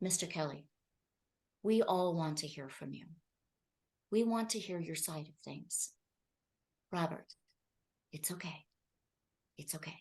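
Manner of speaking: very quiet, steady, low voice. Retelling an interviewer calming a guest who is out of control: Gayle King's lowered tone. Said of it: "she lowers her tone and she says".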